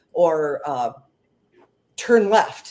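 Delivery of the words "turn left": put-on whispered voice. Retelling what a voice communicates to the speaker: imitating a whisper. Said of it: "It comes in a whisper".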